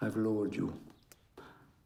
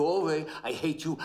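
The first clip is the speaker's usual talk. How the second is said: plain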